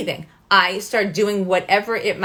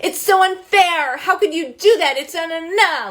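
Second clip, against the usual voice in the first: put-on very high, whiny child voice; 9 semitones higher than usual. Showing how an upset child talks to a parent: imitating a whining child. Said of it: "or they're whining".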